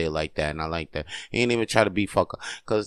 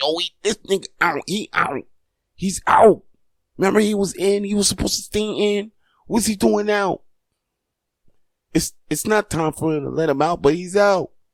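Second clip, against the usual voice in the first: mock excited yelling, very high; 11 semitones higher, 3 dB louder than usual. The speaker reenacts what they yelled at that moment, retelling own yelling. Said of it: "I'm yelling".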